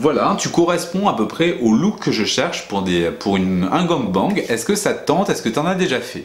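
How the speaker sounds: usual speaking voice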